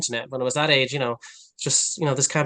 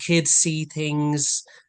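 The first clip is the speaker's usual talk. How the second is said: ordinary delivery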